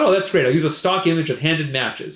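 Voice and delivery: ordinary talk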